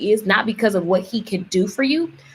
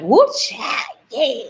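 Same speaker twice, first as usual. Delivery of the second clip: put-on complete Southern belle accent, exclaiming; 4 semitones higher than usual. Telling livestream viewers about her aunt, imitating Aunt Brenda. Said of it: "She is just complete Southern".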